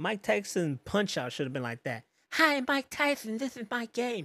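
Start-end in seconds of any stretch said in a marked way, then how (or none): 2.3-4.3 very high-pitched, slow, drawn-out delivery. Joking about a boxing game intro: imitating Mike Tyson. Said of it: "you sound just like him".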